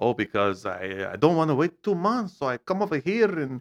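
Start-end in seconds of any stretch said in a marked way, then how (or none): 0.0-2.4 put-on Mexican accent, much louder. Speaker retelling a man's reason for coming over, in a Mexican accent. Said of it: "pretty good like, Mexican accent".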